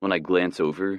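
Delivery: ordinary delivery, nothing marked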